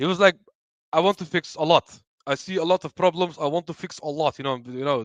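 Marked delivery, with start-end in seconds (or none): 0.9-4.4 English spoken in a put-on Portuguese accent. Retelling what a coach said at a press conference: imitating a Portuguese accent. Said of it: "with the Portuguese accent".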